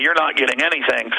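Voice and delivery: plain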